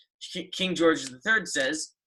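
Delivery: normal talking voice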